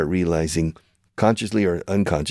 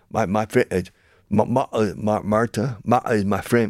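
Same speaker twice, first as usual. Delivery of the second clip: Cockney accent, higher pitch, much slower; 4 semitones higher than usual. Explaining poor english diction, showing how a british speaker says it: cockney accent. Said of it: "with the Cockney style".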